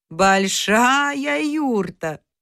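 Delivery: smirk clearly audible in the voice. The khan answers the mice, smirking. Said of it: "усмехнулся хан".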